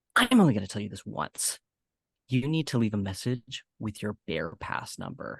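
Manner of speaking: strict, stern, firm, no-nonsense voice. Quoting a woman who won't call her by name, imitating her stern voice. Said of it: "she says that in that exact stern voice".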